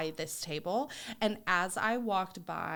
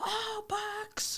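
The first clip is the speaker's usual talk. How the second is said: put-on yelling, higher. Retelling how a cousin yelled across the lunchroom: imitating the cousin yelling. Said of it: "This is my impression of him".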